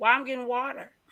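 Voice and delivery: put-on very loud, high-pitched, strong country accent. Retelling the speaker's mom's reply when urged to get water, country accent. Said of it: "She's really, really, really, really country".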